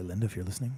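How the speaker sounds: nice, low baritone voice. Reaching out to a viewer named Linda: nice baritone voice. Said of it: "in this nice little baritone voice".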